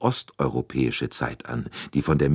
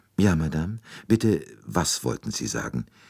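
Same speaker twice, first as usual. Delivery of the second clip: usual speaking voice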